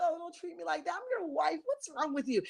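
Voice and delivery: weepy, wounded, crying pleading voice. Mocking how the crying wife pleads with her husband: imitating a crying wife. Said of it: "He loves to see you cry and be like".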